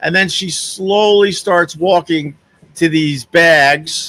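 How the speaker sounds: ordinary delivery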